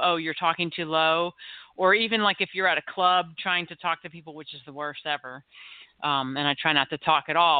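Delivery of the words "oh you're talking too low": ordinary delivery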